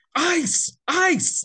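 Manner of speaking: very high, shrill, loud hollered yell. Recalling a coach heard on screen during play, imitating Thibs yelling. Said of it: "he's yelling at you to do something".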